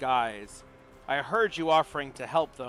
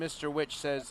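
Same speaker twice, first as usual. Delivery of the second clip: usual speaking voice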